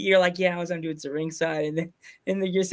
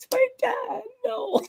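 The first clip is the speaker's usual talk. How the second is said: very high-pitched mock tearful whimpering sob. Recounting a guest slapping his dad on a show, imitate someone crying. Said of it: "You're crying, going".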